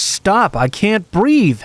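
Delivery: high, slow, drawn-out scream.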